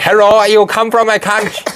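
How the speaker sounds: high, over-the-top exaggerated Chinese accent. Showing how the speaker would talk to Chinese people, in an exaggerated Chinese accent. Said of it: "It's the same with Chinese people".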